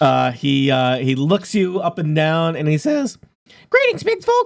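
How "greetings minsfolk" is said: squeaky, very high, tiny owl voice. Voicing a little owl who greets the players from his door: little owl character voice. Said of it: "a Technicolor little owl".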